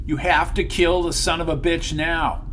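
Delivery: plain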